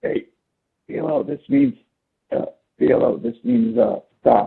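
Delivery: hushed, halting, hesitant whisper. Retelling what a man whispered to Filo: whispering. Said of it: "he like whispers".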